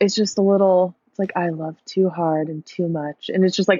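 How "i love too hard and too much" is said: hushed, soft, serious and earnest intimate tone. Imitating a voice memo answered seriously and softly: imitating a soft serious voice.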